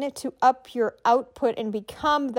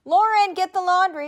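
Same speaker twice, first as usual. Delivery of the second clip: raised, high calling-out voice, somewhat eased back; 7 semitones higher, 4 dB louder than usual. A speaker giving voice tips demonstrates calling out like from upstairs, a bit lower. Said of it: "like you're calling them from upstairs".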